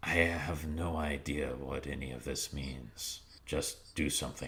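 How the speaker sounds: very quiet, low, hushed half-whisper. Narrating a game scene where a character half-whispers into the player's ear, half-whispering. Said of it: "she whispers into your ear".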